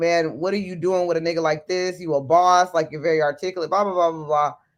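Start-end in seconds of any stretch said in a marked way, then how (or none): none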